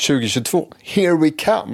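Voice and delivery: very high, eager, hopeful, expectant tone. A podcast host redoes the line after being told to sound more expectant; expectant. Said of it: "Du måste ju låta lite mer så här förväntans".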